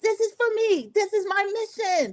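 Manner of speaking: very high, desperate, eager screaming. Recapping a helicopter mission, imitating Morris screaming. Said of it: "Morris started screaming".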